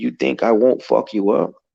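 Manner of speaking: put-on talking dog voice. Retelling a menacing encounter, voicing the talking dog. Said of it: "the fucking dog is talking to me".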